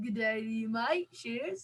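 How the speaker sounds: put-on, friendly, matey Australian accent. Asked to give an australian accent, obliging with an australian accent. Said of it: "do you want my Australian?".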